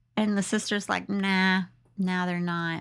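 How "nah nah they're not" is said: mock bored, indifferent tone. Retelling a story, the speaker voices the sister's reply: imitating an indifferent reply. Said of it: "She seems like whatever".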